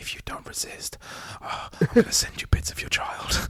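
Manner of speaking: soft, breathy, barely voiced whisper. Retelling a film scene where a man in a balaclava threatens her: imitating a whisper. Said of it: "just whispering to her".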